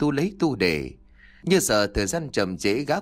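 plain reading voice

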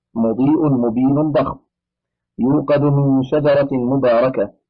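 ordinary delivery

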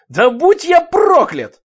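triumphant yell, very high, loud, shrill. A spectator as the turtle sends its opponent into the ropes, shouting. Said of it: "крикнул Руди".

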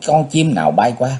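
plain reading voice

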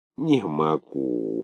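wounded moan. A desperate man at the end of his strength, moaning like a wounded man. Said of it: "простонал он, как раненый".

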